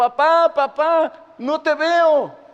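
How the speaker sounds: mock small boy's high, loud, drawn-out yell, very slow. Retelling a child calling down through smoke to his father: imitating a child shouting. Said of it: "el niño le gritaba".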